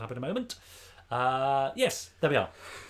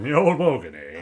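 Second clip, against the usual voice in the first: booming, drawn-out, slow put-on voice; 2 semitones lower, 9 dB louder than usual. Giving in after being asked repeatedly to do a Terry Wogan voice. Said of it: "He's just done it".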